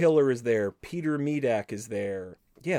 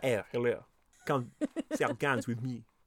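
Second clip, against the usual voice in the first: put-on botched weird Swedish accent; 5 dB quieter than usual. Retelling a scene from Beverly Hills Cop, failed Serge impression. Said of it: "I end up sounding like weird Swedish nonsense".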